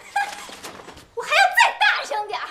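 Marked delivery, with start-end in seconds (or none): 1.1-2.5 defiant, louder, high, laughing shout.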